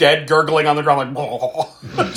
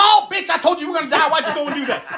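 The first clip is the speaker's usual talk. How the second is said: mock very high scolding yell; 12 semitones higher than usual. Retelling how a moviegoer reacted to a scene: imitating a man yelling at the screen. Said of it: "And he's yelling the whole time".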